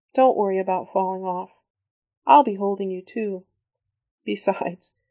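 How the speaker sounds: plain reading voice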